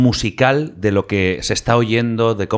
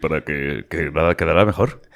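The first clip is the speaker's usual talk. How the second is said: low, deep, put-on radio voice. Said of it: "me hacían poner voz así".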